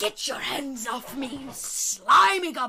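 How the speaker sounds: loud, slow, odd, drawn-out creature hiss. A rabbit speaks while wriggling free of someone's hands; odd hissing voice. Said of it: "This odd hissing voice".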